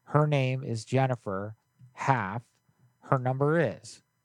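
ordinary talk

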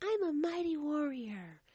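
put-on sweet, high, sing-song little baby voice. Retelling what she said, cute little baby voice. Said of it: "her cute little baby voice, you know, like".

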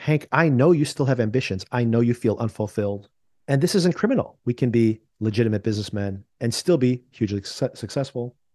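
ordinary delivery

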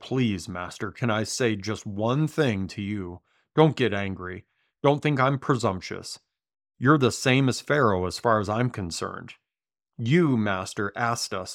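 ordinary talk, nothing marked

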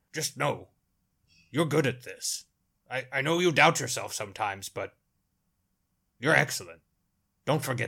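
in all seriousness, very serious. Narrator voicing a character speaking to another character, very serious. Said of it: "very seriously says".

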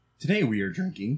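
cracking, breaking voice. Host opening the day's whiskey tasting, voice cracking. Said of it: "My voice cracked".

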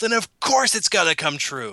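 put-on overexcited half-scream, high, mild, held back. A speaker recaps a scene from the episode, imitating Sokka screaming. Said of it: "Sokka just screams".

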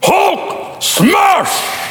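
very high comic-book brute voice. Picturing calling the Incredible Hulk instead: Incredible Hulk voice. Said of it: "Or you could call the Incredible Hulk".

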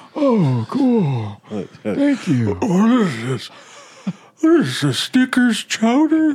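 put-on very high, sing-song, swooping old man voice. In a comedy bit, playing a customer puzzled by the order served, in an old guy voice. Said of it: "you have a better old guy voice than that".

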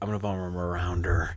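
put-on low, soft Western accent. Retelling how Pat said a line in that moment, imitating Pat's Western accent. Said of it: "like it was like a Western accent".

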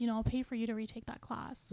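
ordinary talk

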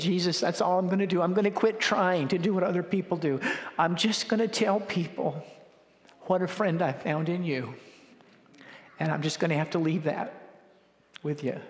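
voice quivering and wavering through every word. Recounting what he once said, acting out his own words with a quivering voice. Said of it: "He's speaking with his voice quivering".

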